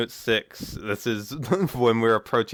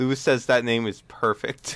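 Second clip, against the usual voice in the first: plain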